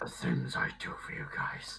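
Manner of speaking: whispered, hushed, breathy wolf character voice. A player voicing their wolf character for the group, in a wolf voice. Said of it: "I get to do my wolf voice".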